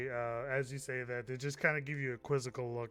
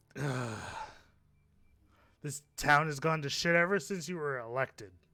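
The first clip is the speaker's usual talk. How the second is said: imitated townsman voice; 5 dB louder than usual. In a role-play scene, Frank complains to the mayor: disgusted Frank voice. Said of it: "The [name] immediately looks at his hat and he's just like".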